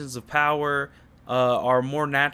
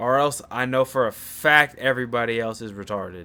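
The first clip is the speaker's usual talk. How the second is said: ordinary talk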